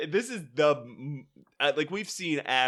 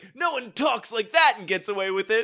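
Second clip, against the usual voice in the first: mock-defiant, bullheaded delivery, much higher; 7 semitones higher, 6 dB louder than usual. Picturing a character standing up for his friend: imitating defiant, bullheaded delivery. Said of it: "as fucking defiant and bullheaded as he has ever been".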